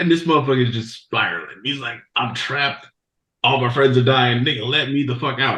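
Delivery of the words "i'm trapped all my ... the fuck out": ordinary talk, nothing marked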